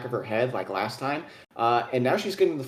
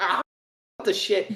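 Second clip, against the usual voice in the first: high, raging harpy cry, lashing out; 6 semitones higher than usual. Voicing a wounded harpy who barely notices the hit: harpy in a rage. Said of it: "in a rage".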